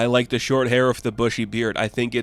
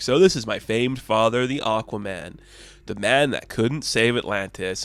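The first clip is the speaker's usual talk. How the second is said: plain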